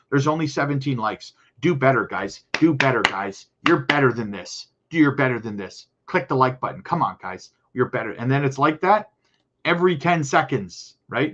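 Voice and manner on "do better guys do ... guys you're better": put-on, completely condescending tone. Mimicking how she keeps telling viewers to click the like button, imitating her completely condescending tone. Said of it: "Just completely condescending".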